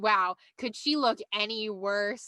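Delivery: slow, sarcastic drawl.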